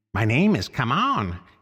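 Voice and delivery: eager, croaking bird voice. A large bird greets a little mouse, croaking enthusiastically as Come On. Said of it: "he croaked enthusiastically".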